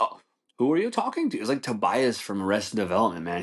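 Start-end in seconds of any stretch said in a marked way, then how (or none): 0.0-1.4 very high, showy, theatrical put-on British accent. Speaker quotes a man who always stayed in character, in a British accent. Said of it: "he would like talk in a British accent".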